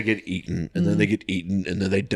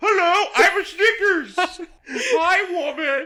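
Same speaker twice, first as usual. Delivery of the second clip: very high, very slow, put-on character voice; 3 dB louder than usual. Making a candy bar talk to a waving woman: talking candy bar voice. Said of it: "I'll make the candy bar talk and go".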